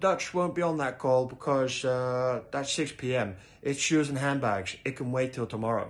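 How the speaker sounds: English spoken with a put-on Dutch accent. Speaker quotes the Dutch CEO's reply on a conference call: Dutch accent. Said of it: "that's my Dutch accent".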